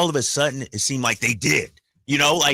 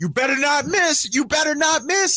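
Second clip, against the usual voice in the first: high-pitched, jeering, yelling heckle; 12 semitones higher than usual. Recounting a courtside fan heckling at a game, retelling a heckler's yell. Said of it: "He's yelling out".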